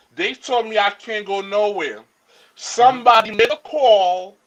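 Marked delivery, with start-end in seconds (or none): none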